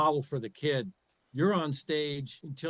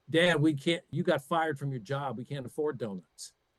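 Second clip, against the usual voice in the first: normal talking voice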